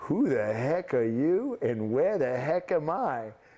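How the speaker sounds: put-on heavy, thick, laid-on New York accent. Recounting a man popping up after a shot, imitating Irv North's New York accent. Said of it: "with this thick New York accent and he goes".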